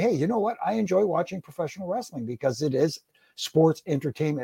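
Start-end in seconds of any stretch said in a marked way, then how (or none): none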